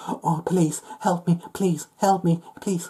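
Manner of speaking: high-pitched, whimpering mock crying. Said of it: "crying like".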